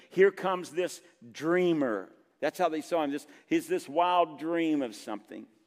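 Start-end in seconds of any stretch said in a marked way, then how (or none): none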